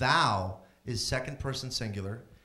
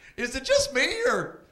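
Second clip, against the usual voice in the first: very high, shrill, loud stand-up comedian patter; 7 dB louder than usual. Doing an impression of a comedian alone on a desert island: stranded lone comedian impression. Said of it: "impression of a stand-up comedian stranded by himself on a desert island".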